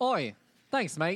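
put-on Australian accent. Thanking someone for letting them go first: put-on Australian accent. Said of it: "I hope that this is an Australian accent".

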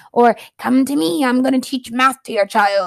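talking like a pirate. Imagining a math teacher offering to teach your child: pirate voice. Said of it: "the math teacher sounds like a pirate".

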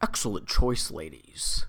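put-on, exceptionally deep voice. Quoting the waiter again for the other speaker: imitating an exceptionally deep-voiced waiter. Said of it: "he's got an exceptionally deep voice".

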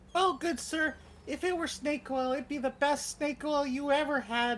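very high, eager, youthful street-seller patter. A game master voices a street merchant answering a doubtful customer: youthful street merchant voice. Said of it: "a youthful street merchant who's a bit on the doughier side".

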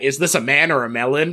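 plain

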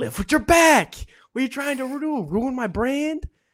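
high, shrill yelling, voice way up. Quoting a father while moving stuff at home: imitating someone yelling. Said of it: "yelling at me".

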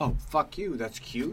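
acted, affronted, offended outburst. Acting out an offended reaction to being called cute: acting offended. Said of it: "That would offend me more".

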